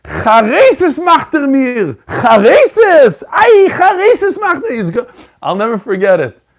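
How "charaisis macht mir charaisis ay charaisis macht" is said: acted out, piercing, shrill, loud, high, drawn-out scream. Retelling how the grandfather reacted to picked flowers: imitating grandfather screaming. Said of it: "he started screaming".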